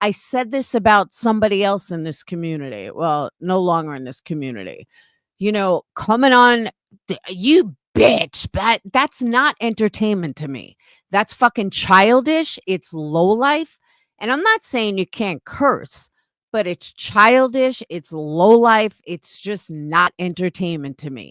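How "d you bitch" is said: slow, drawn-out put-on trashy voice. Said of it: "someone that talks like trash".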